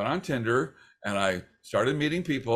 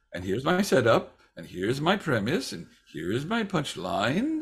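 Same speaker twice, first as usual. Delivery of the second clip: put-on Australian accent, sing-song, each phrase ending going up. Mocking a comedian's delivery: Hannah Gadsby's Australian accent going up. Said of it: "that Australian accent that goes up like this".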